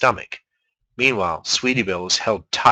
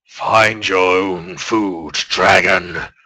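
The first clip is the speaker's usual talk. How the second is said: very slow, wheezing creature groan like bellows; 4 semitones lower, 4 dB louder than usual. The narrator reads a creature speaking to the dragon Spike, in a bellows-like creature voice. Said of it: "Its voice sounded like some pony slowly stepping on a set of bellows".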